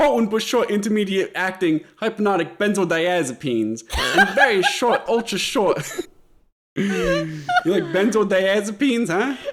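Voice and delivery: put-on Brooklyn accent. Asked to say at least one big word in a Brooklyn accent: Brooklyn accent. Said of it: "can you say at least one big word in a Brooklyn accent?".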